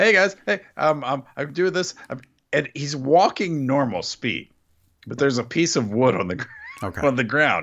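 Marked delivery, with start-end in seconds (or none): 0.0-1.9 high, energetic, hyped-up delivery brimming with energy. Retelling a coworker coming up to greet them: imitating energetic coworker like Cesaro. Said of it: "Why is he Cesaro?".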